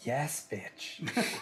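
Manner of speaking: quiet mutter to oneself, under the breath. During a role-play, as the freezer gets popped open: muttered under breath. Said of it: "under my breath".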